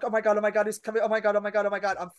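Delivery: mock frantic, giddy, rattled-off panicked excitement. Retelling a guy walking right up to the counter toward her: acting out freaking out. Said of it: "I'm freaking out".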